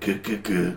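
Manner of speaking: put-on low, soft, grunting British-accented voice. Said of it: "with that British accent just going".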